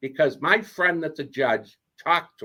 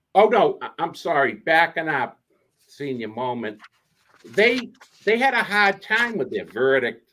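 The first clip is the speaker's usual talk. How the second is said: plain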